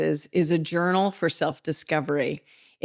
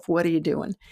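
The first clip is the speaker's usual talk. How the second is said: imitated fearful voice. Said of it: "fear voice".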